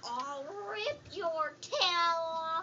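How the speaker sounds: put-on very low, mean old-woman voice, "off" stretched. Acting out a role in a pretend play with others, mean old lady voice. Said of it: "You sound like a mean old lady".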